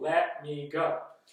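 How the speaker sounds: firm, serious tone. Demonstrating a skill for avoiding conflict: firm, raised voice. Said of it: "you can even raise your voice a little bit and say".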